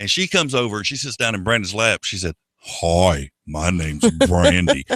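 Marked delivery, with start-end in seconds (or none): 2.6-4.9 deep-voiced woman, lower. Retelling a dancer's greeting: imitating a deep-voiced woman. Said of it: "that woman's voice was deeper than mine".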